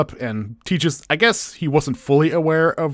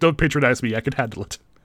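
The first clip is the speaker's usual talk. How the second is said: plain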